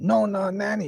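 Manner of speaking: loud yell. Retelling running inside to warn a grandma of fire: imitating own yelling. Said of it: "I start yelling".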